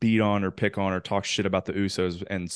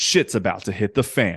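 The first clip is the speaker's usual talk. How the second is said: put-on announcer voice; 4 dB louder than usual. Retelling the match introductions, imitating Justin Roberts. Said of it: "he says".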